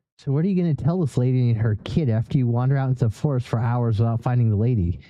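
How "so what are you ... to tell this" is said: plain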